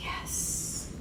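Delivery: "yes" breathed out in a soft unvoiced whisper.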